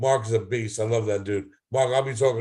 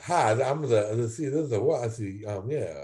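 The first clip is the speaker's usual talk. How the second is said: put-on slow dim-witted voice, quieter; 4 dB quieter than usual. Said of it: "Sounds like Bobby Boucher".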